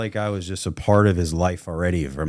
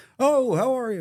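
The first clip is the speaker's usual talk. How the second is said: heavy put-on Scottish accent, old man voice. Retelling an old guy's greeting at a first meeting: heavy Scottish accent. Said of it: "he's heavy Scottish accent".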